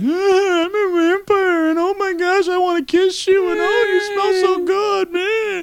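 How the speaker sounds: very high, weepy, whiny crying vampire voice. Mocking Twilight while comparing it with Underworld, in a whiny Twilight vampire impression. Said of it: "Here's my impression of Twilight".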